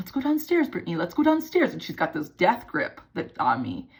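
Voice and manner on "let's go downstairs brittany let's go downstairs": very high, sugary, fake sweet coaxing voice. Retelling how her mother pulled her away during a fight, imitating mom's sweet voice. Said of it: "trying to talk in this like sweet voice".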